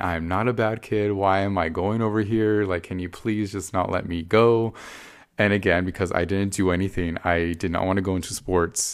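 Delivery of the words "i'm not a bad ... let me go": mock begging, pleading tone. Retelling how they begged her not to make them go: imitating own past begging. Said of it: "I was begging her".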